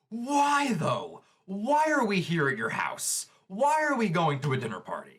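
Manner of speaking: furious, high, swooping angry scream. Recapping an anime scene about a dinner party, voicing Bakugo screaming. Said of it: "Bakugo is just screaming".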